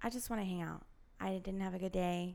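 tiny, small, soft little voice. Retelling what she said to him, in her small little voice. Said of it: "in my small little voice".

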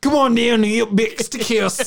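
poor put-on Australian accent. Imitating Outback Steakhouse commercials: Outback Steakhouse bad Australian accent. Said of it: "an American doing a bad Australian accent".

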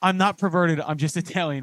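ordinary talk

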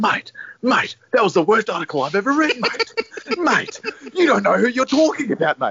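very high-pitched, swooping, angry rant, losing it. Retelling a match story, the speaker imitates Greeny losing his mind over an article. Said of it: "Greeny just starts losing his mind".

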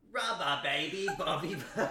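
attempted British accent slipping into Australian. Asked to say a tongue twister in a british accent: attempted british accent. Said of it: "Can I get a sneak peek of that British accent".

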